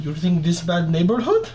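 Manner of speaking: tough-guy, swooping put-on Russian accent. Retelling how a man answered two thug-looking guys in new york, in a russian accent. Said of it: "he would do a Russian accent".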